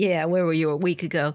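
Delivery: muttered grumble to himself. Playing Yasutada answering an offer of help: muttering under his breath. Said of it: "mutters under his breath".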